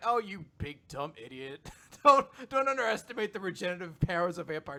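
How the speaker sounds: mock sassy, high-pitched, cheeky back talk. Retelling an anime scene where a floating head talks back: imitating sassy back talk. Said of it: "doing, like, the sassy back talk".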